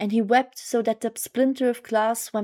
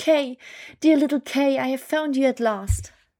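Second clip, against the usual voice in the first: words cried out loudly as exclamation; 4 semitones higher, 3 dB louder than usual. Narrator reads her line as she finds the boy at last, exclaiming. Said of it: "while she exclaimed".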